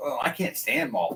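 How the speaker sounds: normal talking voice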